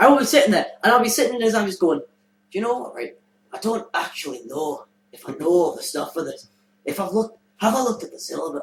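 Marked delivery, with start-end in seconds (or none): 2.0-8.6 put-on musing, thinking aloud in a Scottish accent. Acting out thinking aloud about a serious matter: scottish accent. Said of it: "slip into a Scottish accent".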